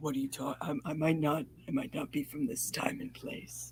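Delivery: hushed, put-on deep, low voice, nearly whispered. Mimicking the other speaker's old-fashioned line: imitating someone's deep voice. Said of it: "You're doing the deep voice".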